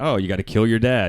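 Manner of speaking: ordinary delivery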